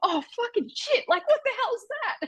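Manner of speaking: put-on very high, startled Australian-accented freak-out. Telling of a spider crawling out of the sheets, retelling own Aussie outburst. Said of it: "the most Aussie noises came out of my mouth".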